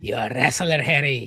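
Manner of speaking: put-on Irish accent, very low. Fulfilling a request to say the line in an irish accent. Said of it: "in [name]'s Irish accent".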